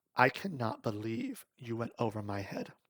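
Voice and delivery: ordinary talk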